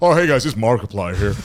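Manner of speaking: loud, belted put-on American accent. Speaker shows friends what their on-the-spot American accent turns into, Markiplier-style put-on American accent. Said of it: "like that".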